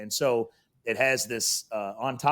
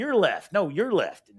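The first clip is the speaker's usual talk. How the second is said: put-on heated, high, swooping angry yelling; 8 semitones higher, 4 dB louder than usual. Retelling how she yelled at the security camera: imitating someone yelling. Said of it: "she's yelling and she's cussing".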